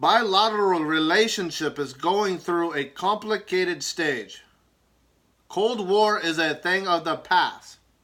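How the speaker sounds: put-on Russian accent, loud, slow and deliberate. Quoting Putin at the press conference, Putin's Russian accent. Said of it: "Do you like my Russian accent on?".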